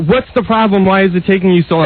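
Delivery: ordinary delivery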